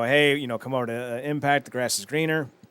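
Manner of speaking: plain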